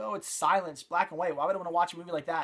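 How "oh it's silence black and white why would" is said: plain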